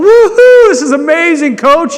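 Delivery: very shrill, booming, drawn-out ecstatic whoop of joy. Retelling how he cheered on a ladder in the icefall at 2 a.m., retelling an excited scream. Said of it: "he's like encouraging them".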